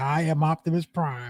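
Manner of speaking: very slow, every word drawn out. Quoting a movie character who steals the show: Optimus Prime voice. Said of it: "when he hit you with the".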